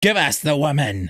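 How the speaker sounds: shrill, croaking creature voice. Narrator reading a hidden creature's demand as the group is surrounded, shrill croaking voice. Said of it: "a shrill voice croaked".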